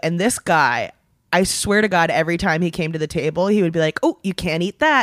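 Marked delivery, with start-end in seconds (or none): 4.0-5.0 mock patronising, condescending waiter voice. Retelling what the waiter said at every visit: imitating a condescending waiter. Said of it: "he was being so condescending with it".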